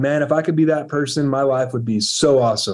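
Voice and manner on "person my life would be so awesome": normal talking voice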